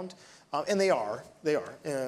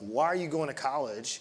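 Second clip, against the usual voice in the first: put-on condescending manner. Retelling how a guy ribbed him at lunch about college, mock-condescending. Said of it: "In this really condescending way".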